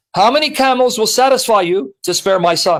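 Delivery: normal talking voice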